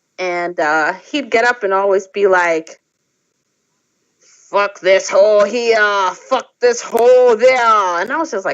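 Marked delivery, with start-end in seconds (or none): 4.2-8.0 heavy, slow, put-on Slavic accent. Retelling what a man always said at readings: imitating a thick Slavic accent. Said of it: "this thick Ukrainian accent".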